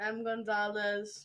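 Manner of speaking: flat, mechanical, machine-like robotic delivery. Introducing oneself at the start of a podcast: robotic-sounding voice. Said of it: "Why did you sound robotic?".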